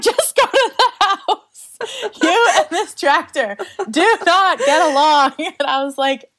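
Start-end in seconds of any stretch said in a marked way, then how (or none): 0.0-5.3 put-on loud, pitched-up yelling. Retelling how he yelled at the speaker after a tractor mishap, imitating someone yelling. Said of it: "he's yelling at me".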